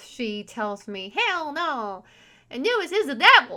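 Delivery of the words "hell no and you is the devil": put-on, raised Southern Texas accent. Retelling what a former partner told them, in her voice: Southern Texas accent. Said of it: "in her Southern Texas accent".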